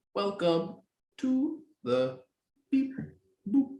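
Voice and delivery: very high-pitched, mechanical robot voice. A host trying out next week's welcome: robot voice. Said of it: "I'm doing it like a robot".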